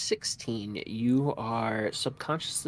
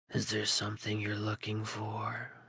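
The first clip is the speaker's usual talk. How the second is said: hushed, almost half-whispered voice; 4 dB quieter than usual. A figure steps forward toward Calliope and asks, almost in a half-whisper. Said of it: "almost in a whisper goes".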